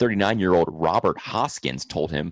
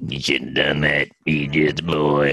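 put-on slow Southern drawl, lower; 3 semitones lower than usual. Joking with another speaker, doing a Billy Bob Thornton impression. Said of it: "I thought you were doing Billy Bob Thornton".

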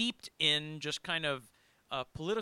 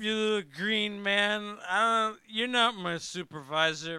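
slurred, louder and higher; 5 semitones higher, 7 dB louder than usual. Acting out a comic book scene with a co-host, slurred speech. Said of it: "all of a sudden you're slurring".

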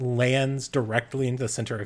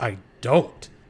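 loud growled delivery; 6 dB louder than usual. Narrating a story, a character answers another character's taunt, growling. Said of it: "He growls back".

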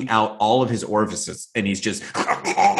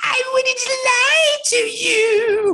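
acted very high, slow, drawn-out taunting crybaby voice. Retelling a scene where a man mocks a crying woman, mocking her crying voice. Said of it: "He's like making fun of her".

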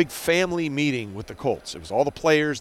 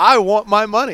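very loud, high, top-of-the-lungs scream; 7 semitones higher, 8 dB louder than usual. Recalling how he screamed at Dave during practice, retelling a full-lung scream. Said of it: "at the top of his lungs".

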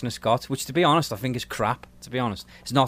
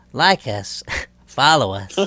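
campy put-on camp voice; 4 dB louder than usual. Mocking a co-host's version of an impression: imitating Craig's camp impression of Scott. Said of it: "yours was more like".

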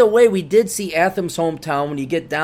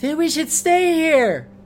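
put-on, very high, exaggerated girly voice; 11 semitones higher than usual. Retelling what the girlfriend said at the hotel, in an exaggerated female impersonation. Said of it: "my universal female impersonation".

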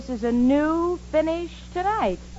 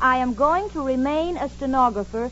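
ordinary delivery

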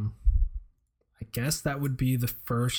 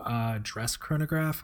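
usual speaking voice

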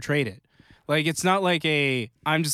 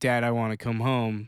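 put-on tearful pleading voice, lower; 3 semitones lower than usual. Retelling a show scene of a character in a car: imitating someone crying. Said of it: "her in the car when she's crying and she's like".

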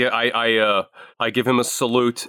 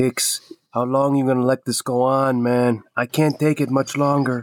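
very quiet, hushed, soft, under the breath. A player in a tabletop game sidles up to hicks in character; speaking very quietly. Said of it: "just very quietly go".

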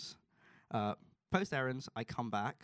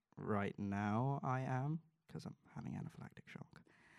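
put-on unsure, careful, tentative, hesitant voice; 4 dB quieter than usual. Retelling a reply to a paramedic: retelling own tentative reply. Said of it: "I reply with a tentative".

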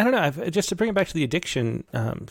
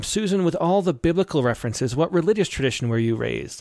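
normal talking voice

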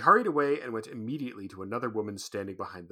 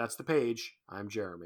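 ordinary delivery, nothing marked

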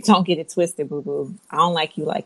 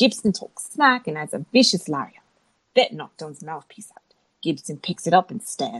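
put-on British accent. Recapping a wrestling match move by move, in a British accent. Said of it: "do this whole review in a British accent".

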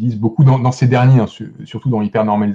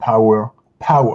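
put-on British accent; 4 dB quieter than usual. French speaker quoting a documentary maker he admires: imitating Adam Curtis's British accent. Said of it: "Pardon pour mon accent anglais".

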